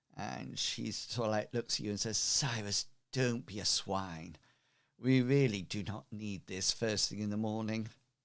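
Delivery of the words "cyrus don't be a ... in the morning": soft, sweet-toned, gentle, dulcet lady's voice. Voicing the lady stepping out of the wagon: soft, dulcet lady's voice. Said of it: "the soft, dulcet tones of, um, the lady".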